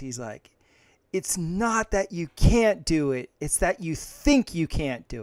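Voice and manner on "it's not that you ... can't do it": put-on fired-up coach voice, yelling very loudly. Retelling an exhausting running drill: imitating Saban yelling at the top of his lungs. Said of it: "Saban yelling at the top of his lungs".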